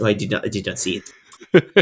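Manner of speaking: put-on French accent. Imitating a football manager denying he saw a foul: Arsene Wenger impression with French accent. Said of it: "that French accent".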